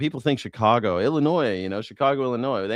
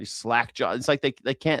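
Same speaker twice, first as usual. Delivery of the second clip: plain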